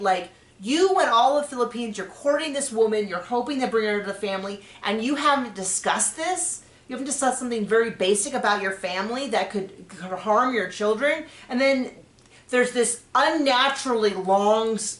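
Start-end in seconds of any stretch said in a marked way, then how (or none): none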